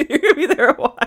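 talking through giggles. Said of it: "I'm sorry for laughing".

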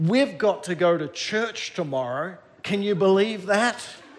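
ordinary talk, nothing marked

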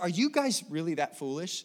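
biting, scornful, intense sarcasm, swooping pitch. Paraphrasing Paul questioning the Galatians: imitating Paul, intense and sarcastic. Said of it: "Paul is pretty intense and sarcastic".

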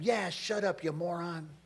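ordinary talk

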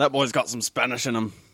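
relaxed Scottish-accented speech. Speaker answers another speaker in a Scottish accent. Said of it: "says the Scottish guy".

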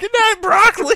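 mock high shriek.

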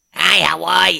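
loud, grating, abrasively annoying cartoon voice. Describing a duck-egg character from a show: abrasively annoying voice. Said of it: "with a really abrasively annoying".

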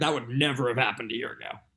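plain

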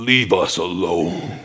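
very deep, low, possessed-sounding put-on man's voice. Retelling what a woman said as her head spun around: speaking in a man's voice. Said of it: "In a man's voice".

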